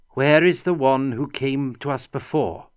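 clear, distinct, high-pitched voice. Reading a story, a monk asks where the earlier visitor is: clear, high voice. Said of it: "in a clear, high voice".

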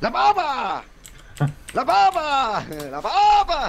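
put-on beach vendor shouting. Retelling a vendor calling out at the beach: imitating a beach vendor shouting. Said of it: "Se pone a gritar".

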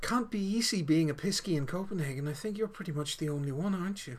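low tone of voice. Retelling what a woman leaned over and said to the seated listener, in a low tone. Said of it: "in a low tone of voice".

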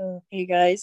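mock-depressed, gloomy tone. Speaker acts out how they would greet others back then: mock-depressed tone. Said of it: "everything would sound depressing".

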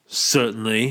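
freezing, icy, cold politeness. Narrator reading Hal's reply to one of the men, with freezing politeness. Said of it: "said Hal with freezing politeness".

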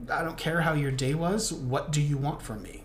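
ordinary talk

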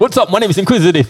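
pumped-up DJ hype voice, loud and high. Showing the others how a DJ hypes the crowd at his live sets, in a hype DJ voice. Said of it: "if you guys want to hear DJ voice".

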